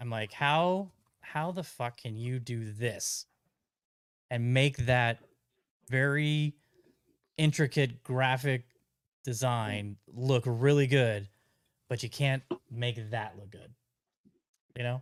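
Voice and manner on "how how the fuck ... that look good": ordinary delivery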